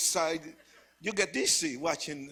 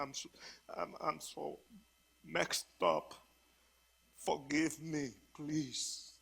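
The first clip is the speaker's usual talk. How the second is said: put-on crying, slow, halting, tearful pleading; 7 dB quieter than usual. Retelling own past plea for forgiveness: retelling a tearful plea. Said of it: "I cried now and I told him".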